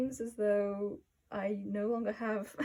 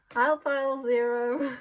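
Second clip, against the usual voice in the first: odd, offbeat, raised tone of voice; 3 semitones higher, 8 dB louder than usual. Filming a video intro before doing the card readings, weird tone. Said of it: "I say that in like a weird tone".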